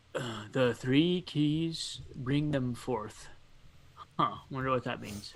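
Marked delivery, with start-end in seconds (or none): 0.2-3.3 very slow, drawn-out dwarven stage whisper. Voicing a dwarf reading runes to herself: dwarven half-whisper. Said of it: "saying in her dwarven whi-, whisper".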